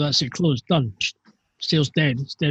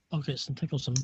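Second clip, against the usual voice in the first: very quiet muttering with blurred, indistinct words; 12 dB quieter than usual. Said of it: "You're mumbling".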